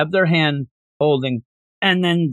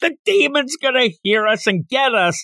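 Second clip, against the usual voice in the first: panicked screaming. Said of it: "yelling louder than anybody in this book yells".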